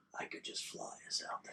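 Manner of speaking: very quiet, hushed, secretive whisper. Moved where others can't hear, suggesting flying out there: whispering. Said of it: "I'm gonna whisper".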